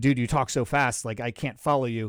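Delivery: ordinary talk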